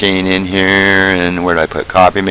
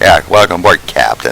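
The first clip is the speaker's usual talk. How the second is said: normal talking voice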